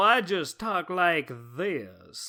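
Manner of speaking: put-on slow, old Southern old-money drawl. Praising a character's voice performance, then doing it: old Southern old-money voice. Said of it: "this old Southern old money voice".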